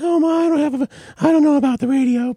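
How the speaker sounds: put-on very high, fumbling, stammering teenage voice. Retelling answering mom's suggestion of a radio job, imitating own seventeen-year-old voice. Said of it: "in my seventeen-year-old voice".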